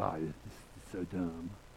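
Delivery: low, slow, soft, tired, jaded griping. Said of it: "you're like".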